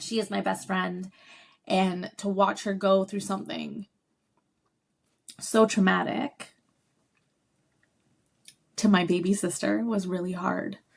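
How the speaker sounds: tearful, choked-up, voice catching, on the verge of tears. Speaker describes watching her younger sister go through trauma: on the verge of tears. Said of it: "I'm gonna cry".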